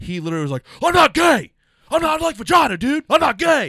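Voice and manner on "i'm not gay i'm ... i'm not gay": mock furious yelling, very high and very loud. Retelling what a guy kept saying after the show: imitating an angry guy. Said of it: "he got so angry".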